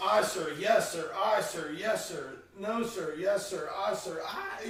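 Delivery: ordinary delivery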